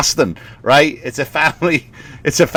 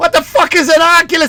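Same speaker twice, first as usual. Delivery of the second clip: very high-pitched blurted outburst. Retelling the dad's reaction to the binoculars gift: sounding like Bill Burr. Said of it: "I sound like Bill Burr for some reason".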